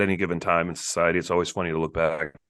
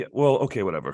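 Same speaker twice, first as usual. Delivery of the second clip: ordinary talk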